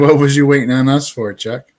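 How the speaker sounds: ordinary delivery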